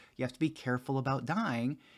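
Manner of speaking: normal talking voice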